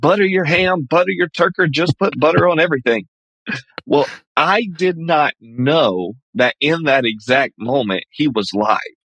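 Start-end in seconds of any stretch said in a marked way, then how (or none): 0.0-3.1 high-pitched screaming at full tilt. Speaker jumps in front of a man's camera at a parade, retelling own screaming. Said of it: "I just start screaming".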